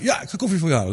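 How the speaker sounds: put-on delight. Telling an interview story, voicing the girlfriend's reply, acting out someone all happy. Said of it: "En die vriendin helemaal blij".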